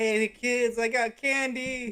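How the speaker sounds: very slow, drawn-out dude voice.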